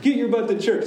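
high, loud, scolding preacher-style voice. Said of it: "a good whipping".

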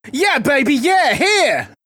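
very high-pitched, loud lumberjack voice. Introduced as show guest Rich Lumberjack Meister, answering the host; Austin Powers-style lumberjack voice. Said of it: "Is that your lumberjack voice?".

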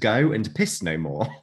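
ordinary delivery

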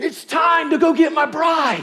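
very high, very loud, eager yell. Retelling how the groom tells the best man it's time: imitating an excited shout. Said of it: "He would shout".

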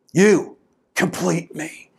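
dramatic, big-moment movie-line delivery. Retelling the movie's famous line to his wife: Tom Cruise impression. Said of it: "in his way".

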